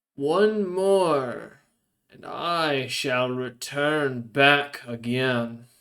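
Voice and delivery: slow, shrieking, screeching unknown creature voice. Game master voices an unseen creature calling out to two players; screeching creature voice. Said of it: "something screeches forth in Abyssal and goes".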